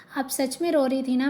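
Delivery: ordinary delivery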